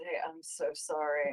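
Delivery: quiet, low, slow under-the-breath mutter. Apologizing in character so the Manticore cannot hear: muttered under his breath. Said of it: "under his breath".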